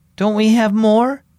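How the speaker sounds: frightened voice, trembling, quavering slightly. The big sister speaks to Mom in the dark, trembling voice. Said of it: "voice trembling".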